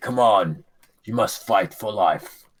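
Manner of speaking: rousing, valorous, inspiring, heroic delivery. Voicing a hero rallying a wounded ally: valorous inspiring speech. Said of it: "inspire, um, Mister Sildar with his valorous words to say".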